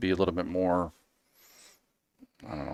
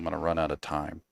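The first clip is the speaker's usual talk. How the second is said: low, soft, somber tone. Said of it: "that sounded hella somber".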